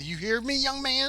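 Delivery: mock shrill, very high scolding yell. Narrating a lady yelling at her son: imitating a yelling mother. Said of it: "there's a lady yelling at her son".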